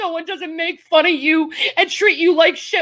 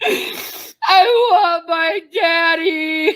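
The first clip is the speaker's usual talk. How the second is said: put-on childlike sobbing and crying. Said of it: "now you sound like a fucking child".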